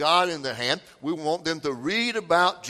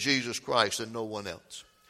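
plain

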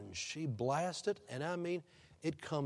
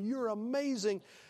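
put-on laughing while talking, higher pitch; 8 semitones higher than usual. Retelling a partner's reaction as the crowd cheers: imitating someone laughing while talking. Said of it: "he is laughing and hugging her and going".

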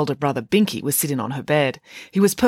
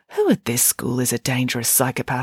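plain

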